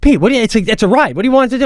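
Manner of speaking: fast rattled-off shout, rising, with restarts. Retelling Jackie yelling at the speaker after a girl falls off, imitating Jackie yelling. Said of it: "Jackie yells at me and goes".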